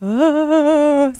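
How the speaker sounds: high, ghost-like scream. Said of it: "So I sound like a ghost".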